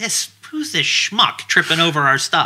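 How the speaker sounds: irritated, put-out, annoyed woman's voice. Retelling a woman's voice caught on camera after he tripped, imitating an annoyed woman. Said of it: "you can hear it in her voice".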